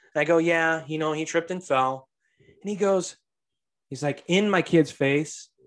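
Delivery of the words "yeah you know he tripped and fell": plain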